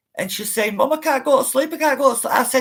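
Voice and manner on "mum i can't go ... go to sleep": play-acted crying, panicked pleading, high and raised. Retelling a daughter's words on the phone after a nightmare: imitating someone crying in panic. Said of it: "she were really crying and she were really panicking".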